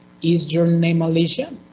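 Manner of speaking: rising intonation on Alicia. Teaching intonation for yes-or-no questions, rising intonation on Alicia. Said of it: "we are going to use the rising intonation. Rising".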